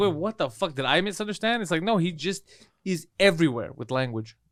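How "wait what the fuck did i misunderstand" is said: ordinary delivery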